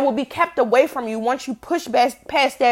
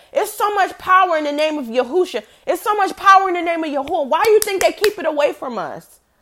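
passionate, heated, high-pitched insistence; 5 semitones higher than usual. Addressing listeners directly, getting worked up: heated, passionate. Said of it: "I'm getting heated".

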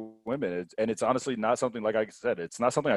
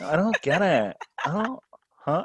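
put-on Valley Girl voice, pitched higher; 6 semitones higher than usual. Acting out a date who doesn't get the joke: Valley Girl voice. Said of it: "I jump right to the Valley Girl".

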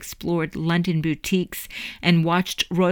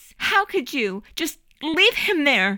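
shrill, very high-pitched, furious yell; 9 semitones higher than usual. A narrator reads a furious mother confronting the boy's father, yelling. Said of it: "She yelled".

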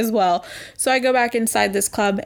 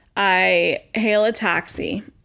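ordinary talk

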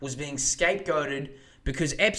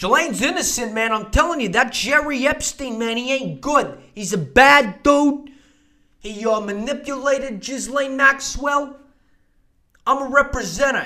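loud, high, snobby, sleazy lawyer voice; 8 semitones higher, 9 dB louder than usual. Mocking the defense lawyer's statement, doing Bobby as a snobby New York lawyer. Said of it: "snobby, dirty rat lawyer from New York".

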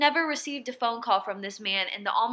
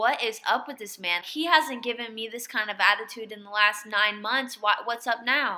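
ordinary talk

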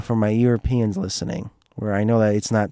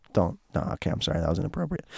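normal talking voice

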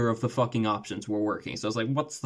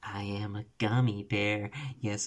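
sultry gummy bear voice, quieter; 5 dB quieter than usual. Picturing a gummy bear masseuse walking in: seductive gummy bear voice. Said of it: "the seductive".

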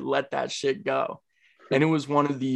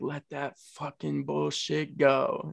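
put-on calming ASMR voice, quieter; 4 dB quieter than usual. Speaker retells how a meditation guide talked, imitating a calming ASMR voice. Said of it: "in like a calming, like almost ASMR type voice".

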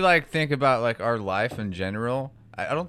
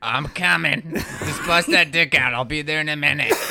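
put-on shrill comic voice, higher and louder; 3 semitones higher, 5 dB louder than usual. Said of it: "she sounds like Gilbert Godfrey again".

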